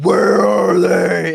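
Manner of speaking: slow, loud, gruff, growling voice.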